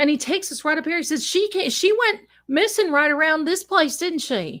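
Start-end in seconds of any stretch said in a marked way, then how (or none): 1.3-4.6 put-on small-town sheriff's accent, laid on thick. Retelling what the sheriff said to the group, imitating a sheriff's accent. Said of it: "this sheriff's accent".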